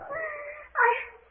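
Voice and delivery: tearful, high-pitched, slow speech through crying. Insisting to the others they are not afraid: crying while speaking. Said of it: "I just can't help crying".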